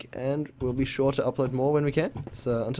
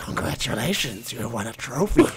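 eerie, creepy, raspy rasping voice; 2 semitones lower than usual. Speaker recounts what a voice said after backing into a corner: creepy raspy voice. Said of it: "this really creepy, raspy voice just goes".

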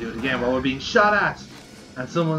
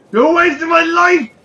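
piercing, shrill, very loud high yell; 11 dB louder than usual. Imitating the other speaker's line as an episode ending. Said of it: "It's just like".

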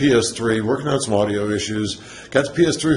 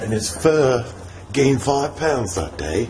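failed British accent drifting Australian. Joking about how fluffy Toby was after bath day: failed British accent. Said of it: "Are you trying to do a British accent?".

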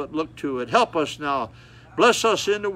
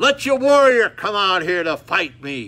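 big, powerful, loud, booming giant's roar; 4 semitones higher, 6 dB louder than usual. Retelling the Bible story, the giant challenges the army to send a warrior: Goliath's big roaring voice. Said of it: "roar with that big voice big powerful man".

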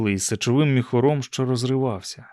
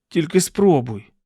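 crying out sharply, high sharp exclamation; 5 semitones higher, 4 dB louder than usual. Narrator reads a character's retort to another's teasing threat, exclaiming. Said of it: "вигукнув Чарльз".

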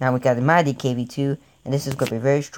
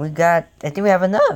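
voice cracking, much higher, louder; 5 semitones higher, 5 dB louder than usual. Playing a game with others, voice cracking mid-sentence. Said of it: "My voice just cracked right there".

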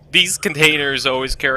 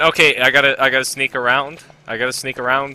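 ordinary delivery

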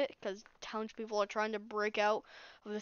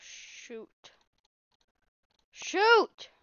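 very high, loud, angry exclamation; 10 semitones higher, 8 dB louder than usual. Placing blocks in the wrong spot while playing: angry outburst. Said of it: "I am mad right now".

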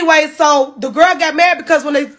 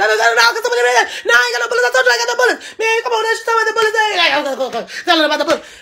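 high, fast, repetitive, rattled-off rambling babble; 7 semitones higher than usual. Retelling an argument, imitating her fast rambling way of talking. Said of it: "that's exactly how she talk".

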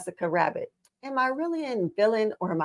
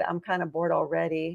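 plain

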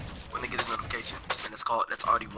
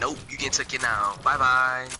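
usual speaking voice

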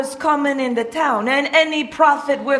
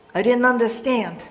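ordinary talk

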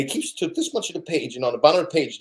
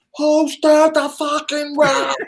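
acted, very high, shrill screaming; 12 semitones higher, 6 dB louder than usual. Retelling how Joe Rio turned around and screamed at the speaker: imitating Joe Rio screaming. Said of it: "turns around and screams at me".

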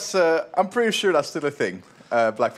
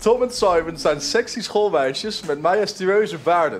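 ordinary delivery

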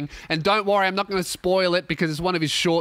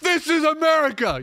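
very high, passionate screamed rant, put-on; 11 semitones higher than usual. Imitating a man ranting into his phone in his car: imitating someone screaming.

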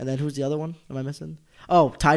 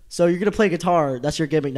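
plain

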